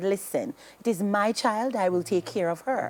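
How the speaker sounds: usual speaking voice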